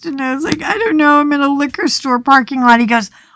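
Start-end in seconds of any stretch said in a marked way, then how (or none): 0.6-2.8 put-on tearful crying voice, higher. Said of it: "I'm crying".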